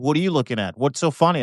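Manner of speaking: angry, irate voice. Retelling what a driver at a red light said: imitating an angry driver. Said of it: "He was so angry".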